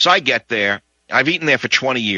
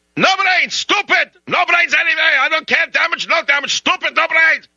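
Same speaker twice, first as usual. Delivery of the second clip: put-on high, screaming, yelling rant in a Russian accent. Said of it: "He says".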